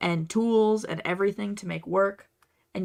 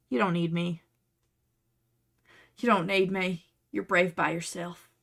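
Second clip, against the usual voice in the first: put-on southern accent with a drawl. Encouraging a viewer who made it work without the pattern: southern accent. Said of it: "I don't know why I went southern there".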